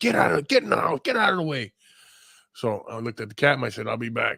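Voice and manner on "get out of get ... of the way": high, irritated, angry yell. Retelling hearing a lady next door at her dog, imitating a lady yelling. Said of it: "I heard a lady yelling at a dog".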